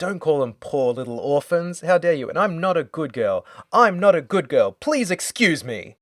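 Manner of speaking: offended, indignant, angry ranting delivery. Retelling a character's lines while recapping a scene: imitating an angry outburst. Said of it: "arcs up again".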